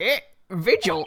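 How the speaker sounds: squeaky put-on voice, Scottish accent. The head of a prison reacts to his chief warder's name: squeaky Scottish accent. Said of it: "try to sound Scottish with the squeaky voice".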